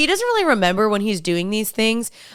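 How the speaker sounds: plain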